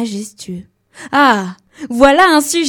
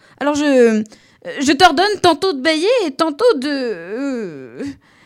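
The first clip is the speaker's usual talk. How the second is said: vexed, slow, stumbling stammer, "de" drawn out; 5 semitones higher than usual. The king, after the little prince says he can no longer yawn, stammering a little. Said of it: "Il bredouilla un peu et paraissait vexé".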